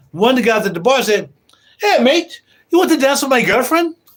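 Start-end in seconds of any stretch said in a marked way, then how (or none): 1.8-3.9 pitched-up put-on accent, almost Irish. Retelling a guy at a bar offering a dance, in a put-on accent, almost irish. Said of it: "I almost sound Irish".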